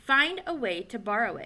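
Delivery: ordinary delivery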